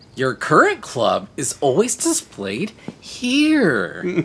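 acted condescending sing-song. Playing a game, repeating the tutorial narrator's line: mock condescending tone. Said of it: "He has kind of a condescending tone to his voice".

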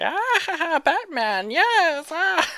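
put-on villain laugh. Describing someone's weird laughter, imitating a 60s Batman Joker-like laugh. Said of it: "the fucking Joker from the 60s Batman".

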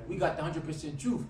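ordinary delivery

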